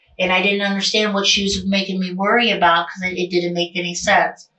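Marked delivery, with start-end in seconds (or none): none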